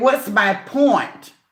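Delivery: combative, confrontational, challenging tone thrown back. Retelling how a woman came for her, mimicking a confrontational tone. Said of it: "she spoke to me in that tone".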